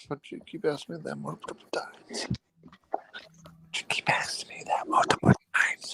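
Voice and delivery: soft, voiceless whisper. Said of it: "why are you whispering it?".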